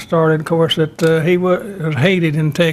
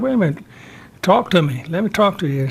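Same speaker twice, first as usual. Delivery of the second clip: plain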